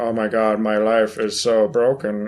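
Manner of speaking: put-on flat monotone voice. Imitating a game heroine who speaks flatly: imitating a monotone Samus. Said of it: "she's, like, monotone".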